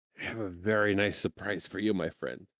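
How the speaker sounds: confiding, secretive, just-between-us tone. Narrating a character's reply to the one he calls friend, in an even quieter voice. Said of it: "in an even quieter voice".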